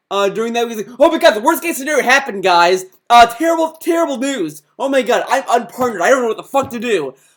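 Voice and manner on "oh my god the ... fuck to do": loud, frantic, panicking outburst. Retelling what someone said after losing a partnership: imitating someone panicking. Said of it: "why was he panicking".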